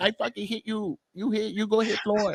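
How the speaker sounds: very high, weak, toothless voice, tough-sounding, broken English. Mocking how a boxer sounds speaking English: weak-sounding Canelo impression. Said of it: "when you talk, like".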